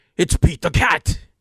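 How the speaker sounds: loud, high, belted cartoon cat voice. Announcing a new park character to a co-host, doing a Pete voice. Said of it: "I can't do a Pete to save my life".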